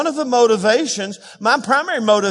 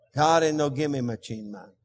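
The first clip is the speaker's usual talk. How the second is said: loosely done put-on Spanish-speaking accent; 8 semitones lower, 7 dB quieter than usual.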